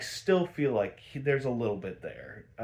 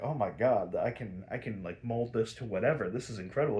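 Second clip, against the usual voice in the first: plain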